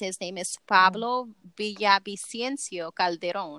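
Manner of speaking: word said with Spanish-accented pronunciation. Reading out a detained man's name: accented pronunciation of the name. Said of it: "You like that accent, huh?".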